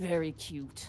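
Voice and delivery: monstrous creature voice. Voicing a creature holding Remy as it turns toward a player: Glabrezu demon voice. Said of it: "the creature holding Remy in its claw turns towards you, panic, and goes".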